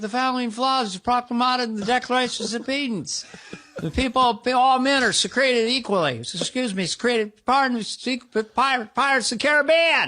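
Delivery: stumbling, flubbing speech, pressing on through mistakes. Doing a comedy impression that others call very good: Biden impression. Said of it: "a Biden impersonation".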